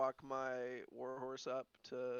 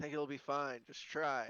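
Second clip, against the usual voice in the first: grumbled aside, kind of loud; 4 dB louder than usual. Answering in character whether horses may come aboard: muttering kind of loudly. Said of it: "I mutter, like, kinda loudly".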